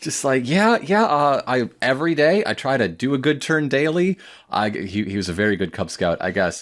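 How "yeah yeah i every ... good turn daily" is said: put-on keen, eager-to-please, excited gushing chatter. Retelling what a chatty, friendly stranger said: imitating an excited man. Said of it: "he's very excited".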